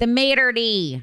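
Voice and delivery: thick Michigan accent. Co-hosts introducing this week's topic, saying the term in a thick Michigan accent. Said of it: "as we say with a thick Michigan accent".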